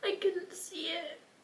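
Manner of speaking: crying while talking. Describing hurting people they loved, crying while talking. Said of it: "I stopped crying".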